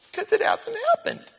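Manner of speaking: high, crying complaint.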